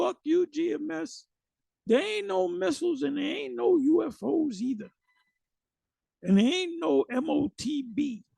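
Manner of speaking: put-on raspy, high, slow, drawn-out shouted outburst. Imitating a person who fell away, yelling in anger: imitating someone yelling. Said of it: "you gonna start yelling".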